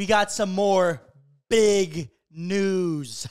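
slow, loud punch on BIG.

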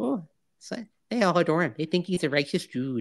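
put-on soft, high, sing-song upper Midwestern accent. Quoting a movie line about Ferris: higher-pitched Midwestern voice. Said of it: "I have to do a little bit higher pitch. It's that Midwestern thing".

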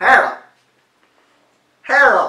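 muffled mouth guard speech. Reading a phrase aloud in a game, talking with a mouth guard in. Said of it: "my turn to put the mouth guard in".

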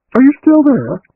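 anxious, worried, very high-pitched voice. After a long silence in the conversation, a woman speaks up, anxious. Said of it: "asked Agatha anxiously".

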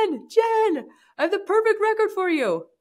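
mock thrilled, very high, swooping voice. Retelling her coach calling her, imitating him all excited. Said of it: "he's all excited".

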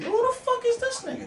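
put-on baffled reaction.

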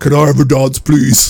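very polite gentleman voice, low-pitched and courteous. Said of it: "this really polite dude".

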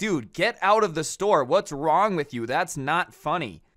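mock fed-up, pissed-off, angry scolding tone. Retelling a clerk throwing a prankster out of the store; imitating someone pissed off. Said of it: "pissed and is like".

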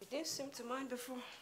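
very soft sarcastic aside under the breath. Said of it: "What was that?".

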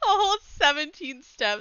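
loud cackling laugh. Checking a step count of only seventeen: loud cackling laugh while talking. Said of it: "I just probably cackled in your ears so loud".

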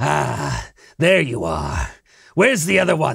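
menacing, malice-laden, with swooping pitch. Narrating a game as Vincent emerges into the courtyard: Ren, maliciously grinning. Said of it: "kind of grins with this, you know, malicious smile".

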